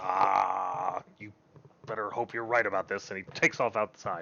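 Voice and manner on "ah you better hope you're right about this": frustrated, exasperated, annoyed long drawn-out ah. A game master voicing a character after a persuasion roll, frustrated and annoyed. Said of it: "He seems just more frustrated and annoyed".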